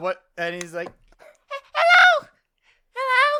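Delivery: very high-pitched voice. Describing a voice heard in a show, speaker imitates it: very high-pitched voice. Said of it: "you hear a very very high pitched voice".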